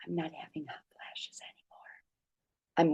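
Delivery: hushed, breathy, very quiet whisper. Sharing a nightly warm-water drink routine, then: whispered. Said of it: "I'm whispering that because it's hard to believe".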